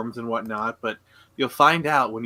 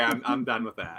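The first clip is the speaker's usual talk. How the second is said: ordinary delivery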